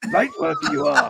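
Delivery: very high, squeaky put-on character voice, fully in character. After the other speaker says please do, doing a Yoda impression. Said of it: "Over my Yoda impression".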